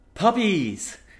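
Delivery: thrilled, shrill, very high-pitched squealing scream. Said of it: "whatever you scream on the way down".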